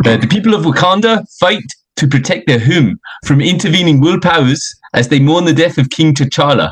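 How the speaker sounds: put-on South African accent. Reading a movie plot summary aloud, in a South African accent. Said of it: "Fucking South African, I'll do that".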